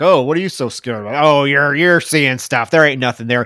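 put-on dismissive tone. Retelling how he blows off the hysterical woman, retelling a dismissive brush-off. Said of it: "he still blows her off".

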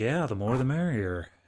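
disappointed, let-down tone of voice. Quoting a movie character's line to correct another speaker: imitating a disappointed tone. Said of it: "he sounds genuinely disappointed".

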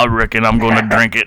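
deep, low character voice. Riffing on how Rum sounds in their heads, a speaker answers in Sling Blade voice. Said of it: "Like Sling Blade?".

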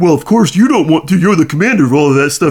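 dim, doofus-sounding, dopey doy-doy voice. Recapping a Stargate plot, voicing what the others are thinking: dopey doy-doy voice. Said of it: "That was a really good doy-doy voice".

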